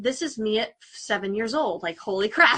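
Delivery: ordinary talk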